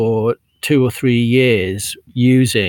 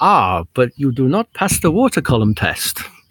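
put-on, vaguely German accent. Retelling Gore-Tex's reply to the jacket maker, in a German-sounding accent. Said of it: "It sounded German".

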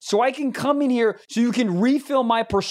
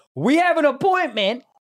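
mock, slightly heated, irritated tone; 4 semitones higher than usual. Retelling her second reply to a request: imitating a heated reply. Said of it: "she goes a little heated".

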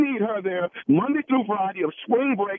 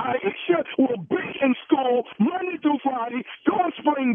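heated, hard-pressed, insistent delivery; 4 semitones higher than usual. A parent arguing with someone from the school, yelling. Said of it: "Who are you yelling at like that?".

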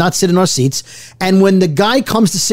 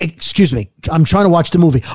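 put-on grumpy, annoyed man voice; 2 semitones lower than usual. Retelling a plane flight, quoting the annoyed seatmate: imitating a grumpy man. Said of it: "the grumpy guy".

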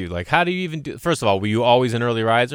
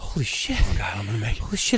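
acted, building nervous dread and fearful panic; 4 dB quieter than usual. Speaker retells waiting to get on a radio call-in, retelling anxious panic.

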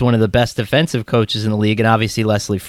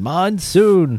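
high-pitched mock yell. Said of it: "we used to always yell that at each other".

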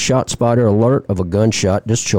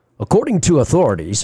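put-on radio announcer voice, pitched up; 5 semitones higher than usual. Reading a news story about a police chase, in radio voice. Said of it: "I'm going to do this with my radio voice".

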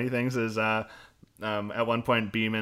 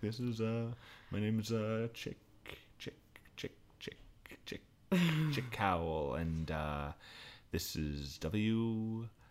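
very quiet, faltering, low-energy voice; 12 dB quieter than usual. Retelling a character's radio sign off: imitating a low-energy sign off. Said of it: "a very kind of low energy sign off".

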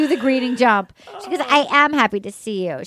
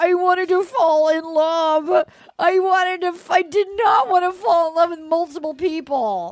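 put-on tearful weepy crying, love drawn out; 3 semitones higher than usual. Retelling what a crying contestant said about falling in love: imitating Clayton crying. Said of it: "so he's crying. He's like".

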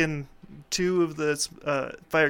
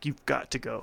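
mock forceful, strong, firm, no-nonsense tone; 3 semitones lower, 4 dB quieter than usual. Recounting what the speaker told him, in a strong voice: strong voice. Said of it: "and then I did my strong voice".

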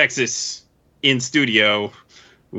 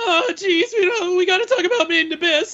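put-on nervous teen voice, much higher pitch. Performing a bad Rick and Morty impression bit: bad Morty impression. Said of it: "had somebody do bad Rick and Morty impressions".

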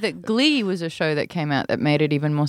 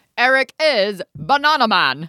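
high-pitched British radio announcer voice; 5 semitones higher, 3 dB louder than usual. Describing how a UK show opens, quoting its intro line: Bananaman radio voice. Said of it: "radio voice from Britain that goes".

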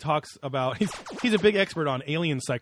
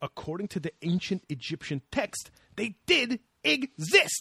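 annoyed, worked-up, rising irritated voice; 4 semitones higher than usual. Retelling a disagreement with him, imitating an irritated man. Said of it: "he gets all, like irritated".

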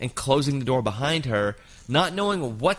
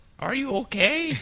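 put-on elderly lady voice, very high; 12 semitones higher than usual. Retelling what the woman rubbing the speaker asked, in an old woman voice. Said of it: "that's my old woman voice".

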